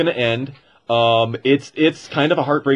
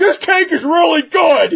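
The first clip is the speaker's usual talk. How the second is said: mock very high, shrill yelled-out shout; 4 dB louder than usual. Retelling a film scene where a character eats cake alone, imitating a shout.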